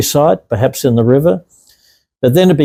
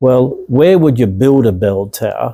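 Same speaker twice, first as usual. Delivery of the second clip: normal talking voice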